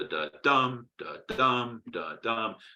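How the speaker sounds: slow da DUM beat, stress on dum. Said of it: "unstress, and then stress".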